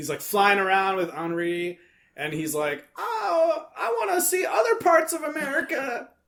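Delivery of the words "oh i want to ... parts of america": very high, drawn-out cartoon voice. Retelling the film's final line as the character sounds: imitating a cartoon character's voice. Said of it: "That's what he sounds like in my head".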